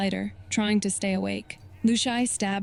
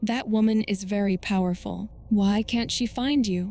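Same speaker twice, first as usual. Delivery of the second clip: usual speaking voice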